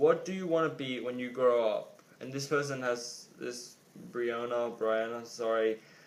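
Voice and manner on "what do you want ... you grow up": plain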